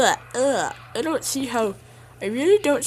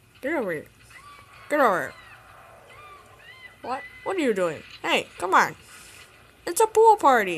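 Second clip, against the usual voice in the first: put-on grumpy, swooping, comic dinosaur voice; 4 semitones higher than usual. Voicing the dinosaur in a comedic scene: put-on dinosaur voice. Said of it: "I'm going to be doing the voice of the dinosaur".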